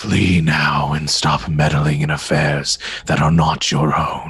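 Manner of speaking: low, raspy, rasping, otherworldly voice. A game master voices an enemy speaking telepathically to the players: raspy telepathic voice. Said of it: "raspy voice uh, that says".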